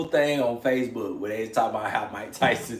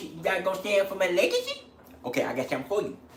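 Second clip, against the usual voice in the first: imitated boxer voice, pitched much higher; 6 semitones higher, 5 dB quieter than usual. Doing a voice another person questions, a Mike Tyson impression. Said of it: "Why do you sound like mm, that? / that's how Mike Tyson talks".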